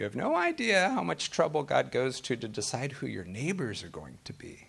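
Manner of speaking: sing-song voice with pitch swooping and dipping. Retelling what a friend used to say, in his Yoda voice. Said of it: "in his Yoda voice".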